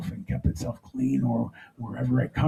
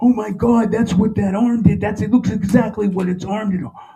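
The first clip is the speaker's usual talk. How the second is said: very high, loud screaming outburst; 9 semitones higher, 7 dB louder than usual. Retelling a shock at the movies: imitating their own screaming. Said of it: "we started screaming".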